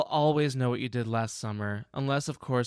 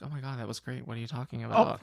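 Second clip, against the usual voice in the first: ordinary delivery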